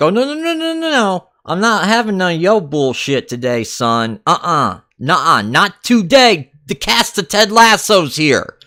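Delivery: high, sing-song, brushing-off, no-nonsense dismissive tone. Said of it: "she's like".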